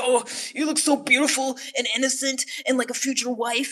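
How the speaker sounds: mock gushing laid on thick, high and loud. Retelling a message from one guy: imitating a gushing flatterer. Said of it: "that one guy was like".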